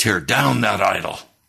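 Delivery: harsh, savage, rough and creaky delivery. Retelling the words heard during meditation: imitating a savage voice. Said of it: "a savage command".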